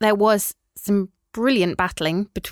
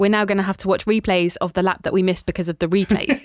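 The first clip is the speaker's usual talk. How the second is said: usual speaking voice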